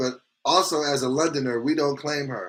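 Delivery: ordinary delivery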